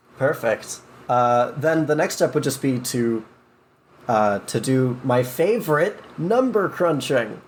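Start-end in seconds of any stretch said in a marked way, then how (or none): 4.4-7.3 heavy sarcasm, high and swooping. Explaining the next step of making a game character: heavy sarcasm. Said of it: "as much sarcasm as possible".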